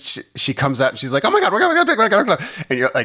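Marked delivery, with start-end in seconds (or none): 1.2-2.5 very high-pitched TV commercial announcer patter. Retelling a coach's entrance at a race: imitating the Micro Machines guy. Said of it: "doing, like, the Micro Machines guy thing".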